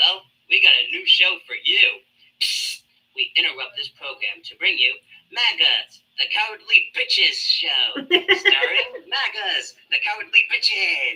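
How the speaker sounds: swooping cartoon show announcer voice. Speaker announcing a parody cartoon show to a listener, in a cartoon voice. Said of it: "I love your cartoon voices".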